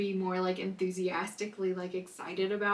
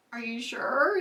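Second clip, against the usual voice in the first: all-excited, eager voice; 5 semitones higher, 5 dB louder than usual. Retelling a present-opening, the speaker acts out her past self, mock-excited. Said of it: "And I'm like all excited like my mom was".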